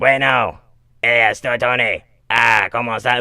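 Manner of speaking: loud, fluent Spanish spoken in a tracheotomy voice. Retelling a man answering his phone in Spanish, imitating Tony's tracheotomy voice in Spanish. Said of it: "like via tracheotomy talk".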